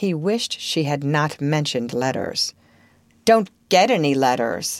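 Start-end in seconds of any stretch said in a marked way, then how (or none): 3.2-4.8 contemptuous and scornful, much lower pitch. A boy answers his hostess's question about letters, contemptuous. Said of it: "he said contemptuously".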